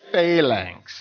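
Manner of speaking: phalanx pronounced the southern way. Talking about stormtroopers, saying phalanx with a southern accent on phalanx. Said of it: "I pronounce it the southern way".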